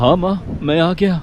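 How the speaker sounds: ordinary delivery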